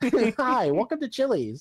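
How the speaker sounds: high, swooping, drawn-out restaurant host voice. Imagining the meme guy popping out from behind a wall: imitating the Chili's meme guy.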